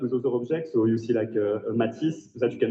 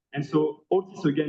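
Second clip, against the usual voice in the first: plain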